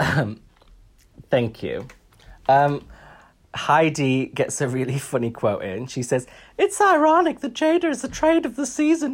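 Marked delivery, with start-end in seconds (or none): 6.6-9.1 high, squeaky mouse voice. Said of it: "She's turning into Minnie Mouse now".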